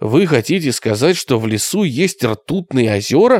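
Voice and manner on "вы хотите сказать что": plain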